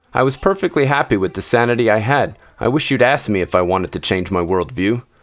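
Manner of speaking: ordinary delivery, nothing marked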